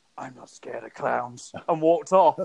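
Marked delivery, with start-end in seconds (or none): 0.2-1.6 put-on superhero voice, kept soft and hushed. Retelling walking past a man cheering on the stairs, in a Batman voice. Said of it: "So I put my Batman voice on".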